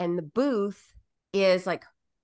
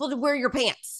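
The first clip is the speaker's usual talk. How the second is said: acted, pitched-up calling-out voice; 6 semitones higher than usual. Recalling calling out to half-naked Fulton in Chick-fil-A, said really loud. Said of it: "I said it like really loud".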